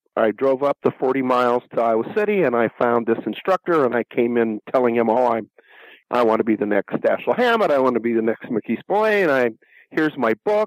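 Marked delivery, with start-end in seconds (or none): none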